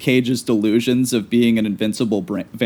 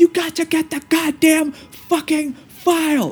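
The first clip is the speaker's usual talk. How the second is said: mock unhinged screaming, very high and drawn out. Recounting a scene in a cab where he screams at her: retelling a scream. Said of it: "he just starts screaming at her".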